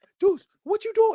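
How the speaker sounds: shrill, very loud, very high scream. Retelling screaming at the TV during a game: retelling screaming at the TV. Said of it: "I literally screamed at my T V".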